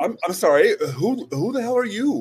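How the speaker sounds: high-pitched, loud, startled outburst. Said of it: "I'm like".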